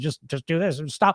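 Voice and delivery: mocking put-on know-it-all voice. Mimicking people who give easy advice, in a mocking know-it-all voice. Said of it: "the know-it-all voice".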